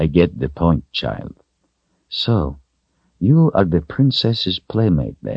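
ordinary delivery

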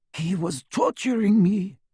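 gasping out the words. Ollivander answers Harry as he is leaving: gasping. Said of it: "he gasped".

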